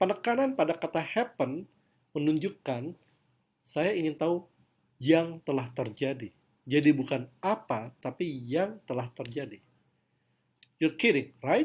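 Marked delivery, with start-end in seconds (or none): 10.8-11.7 high, questioning rising pitch on right. Demonstrating sentence intonation in a lesson, high rising pitch on 'right'. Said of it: "kata right di sini mengalami intonasi yang tinggi".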